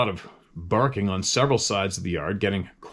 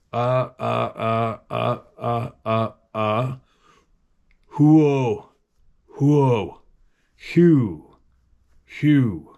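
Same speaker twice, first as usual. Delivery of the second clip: very slow sobbing turning into owl-like hoots; 2 semitones higher, 4 dB louder than usual. Reading out typed-in sounds, sobbing turning into an owl hoot. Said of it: "It was it was sobbing that ended by blending into an owl hoot".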